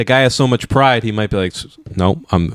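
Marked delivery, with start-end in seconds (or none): 1.5-2.6 small mumbling voice, mouth barely opening. Imitating the proud coach refusing a demotion, Bill's mumbly voice. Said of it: "in his little mumbly voice".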